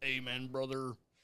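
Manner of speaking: robotic-sounding voice. Agreeing with the other speaker's rule about solicitors, in a robotic-sounding voice. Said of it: "Why did I sound like a robot?".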